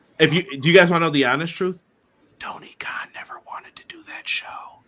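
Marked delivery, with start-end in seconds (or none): 2.4-4.5 secretive, hushed, very quiet whisper. Speaker shares something viewers aren't supposed to know, whispering. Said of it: "I'm whispering it".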